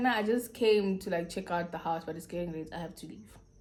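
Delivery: ordinary delivery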